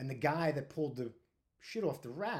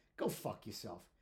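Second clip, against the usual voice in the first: mimicked undertone, lower and quieter; 7 semitones lower, 6 dB quieter than usual. Retelling what a man said as he turned around, imitating him under his breath. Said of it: "under his breath".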